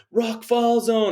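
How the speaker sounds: mock shrill, very high-pitched scream. Retelling how a man yelled at the speaker through a fall zone, imitating someone screaming. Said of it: "He's just like screaming at me".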